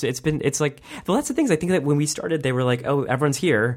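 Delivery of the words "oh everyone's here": usual speaking voice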